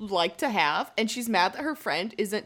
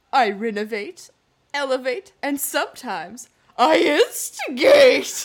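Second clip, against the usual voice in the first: very loud, slow, drawn-out put-on belting voice; 4 semitones higher, 8 dB louder than usual. Repeating a line Margaret delivers, done as a Margaret impression. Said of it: "I'm going to do it in my Margaret voice".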